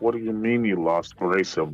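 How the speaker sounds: hushed, reined-in, quiet, low-pitched voice. Retelling a phone call after hearing someone was lost, in a quieted-down voice. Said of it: "I quiet my voice down".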